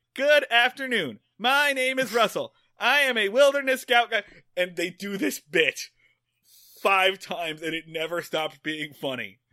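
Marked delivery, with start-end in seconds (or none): 0.2-4.2 loud, high, word-for-word reading aloud. Retelling a bit where a kid reads from a wilderness guide, kid reading verbatim from guide. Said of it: "reads verbatim from the guide".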